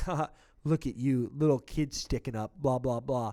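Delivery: mock taunting chirp. Retelling a fight, the speaker acts out the big guy chirping at him, mock taunting. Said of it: "the big guy chirps and he's like".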